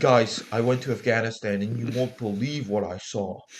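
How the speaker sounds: poor, clumsy put-on British accent. Joking with a co-speaker about hanging out in Afghanistan, do a bad Lord Miles impression. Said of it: "I can't do a British accent".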